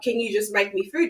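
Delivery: put-on rude, demanding tone. Retelling a child's demand for breakfast: imitating a rude demand. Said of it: "was talking to me like shit".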